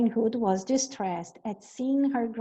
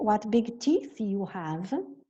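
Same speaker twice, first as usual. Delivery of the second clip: normal talking voice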